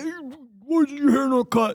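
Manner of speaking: sudden, high, out-of-nowhere put-on barked yell. Retelling how a leader came out of nowhere: imitating someone yelling. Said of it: "start yelling".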